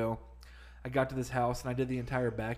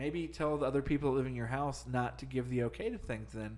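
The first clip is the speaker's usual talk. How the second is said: usual speaking voice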